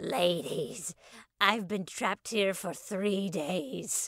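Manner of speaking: slow, crackly voice with drawn-out words. Reading a story, voicing a third person trapped in the dressing room: high-pitched crackly voice. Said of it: "high-pitched and crackly voice".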